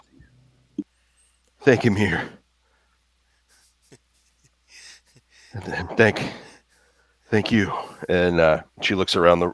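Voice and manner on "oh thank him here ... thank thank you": acted crying, quieter. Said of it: "wiping tears off".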